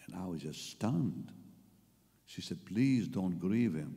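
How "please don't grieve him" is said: put-on pleading, begging tone. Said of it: "begging, pleading".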